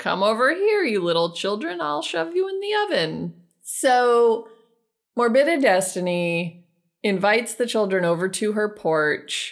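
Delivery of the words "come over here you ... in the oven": high, cackling wicked witch voice. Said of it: "Morbided Destiny is out on her porch and is like".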